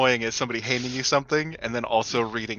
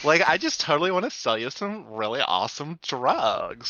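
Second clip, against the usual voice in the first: heavy, laid-on put-on Valley Girl accent; 3 semitones higher than usual. Playing a drug seller offering drugs to another player: Valley Girl accent. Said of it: "the Valley Girl accent".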